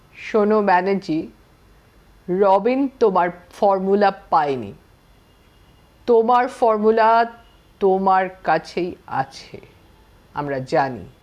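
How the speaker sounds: slow solemn tone. Reading a story where a short man threatens a captive: slow grave voice. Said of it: "ধীর ও গম্ভীর স্বরে একটু ভাঙা ইংরেজিতে বলল".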